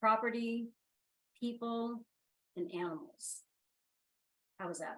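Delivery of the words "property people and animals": speaking deliberately slowly. Listing things for listeners after promising to slow down: speaking deliberately slowly. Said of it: "I'm gonna try to really slow down".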